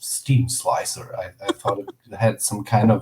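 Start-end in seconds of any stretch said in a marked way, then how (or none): 0.0-1.1 whispered, breathy commercial announcer voice. Retelling saying a band name to a girlfriend: imitating own commercial voice. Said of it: "like, a commercial voice".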